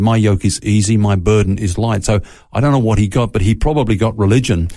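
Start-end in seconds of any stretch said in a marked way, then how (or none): none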